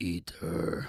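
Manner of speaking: hushed, breathy, whispered beast voice. Retelling the beast in his head urging him on at school: beast voice. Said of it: "speak to myself in this beast voice".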